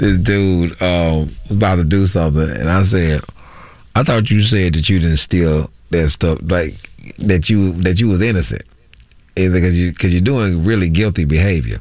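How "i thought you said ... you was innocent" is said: normal talking voice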